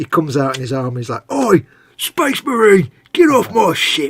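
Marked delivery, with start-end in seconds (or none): 1.3-4.1 loud, drawn-out football hooligan shout. Pitching a game idea, the speaker voices a mega boss in a football hooligan voice. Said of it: "football hooligan voice".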